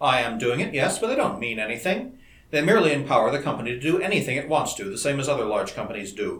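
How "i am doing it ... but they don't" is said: plain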